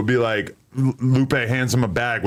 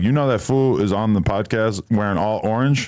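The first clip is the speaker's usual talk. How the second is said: ordinary talk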